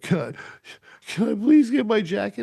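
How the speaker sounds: put-on very high, loud, tearful blubbering sobs. Retelling a kicked-out bar patron begging for his jacket: imitating a man crying. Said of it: "crying his eyes out".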